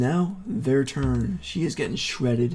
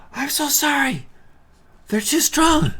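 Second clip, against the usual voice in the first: very high, called-out yelling; 14 semitones higher, 5 dB louder than usual. Voicing a fleeing character who yells back an apology: yelling an apology. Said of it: "She yells".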